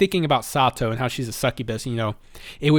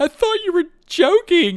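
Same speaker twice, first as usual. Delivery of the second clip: very high, loud, running, called-out yell; 5 dB louder than usual. Retelling an anime scene where a character runs off: imitating a character yelling. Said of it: "runs away yelling".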